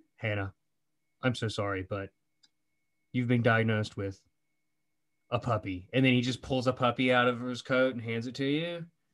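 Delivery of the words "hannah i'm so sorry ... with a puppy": grave, stern, low-pitched serious voice. Imagining a doctor breaking news to a patient: mock stern doctor giving bad news. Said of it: "looking very stern and goes".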